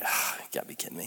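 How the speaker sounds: soft, fast, whispered grumble under the breath.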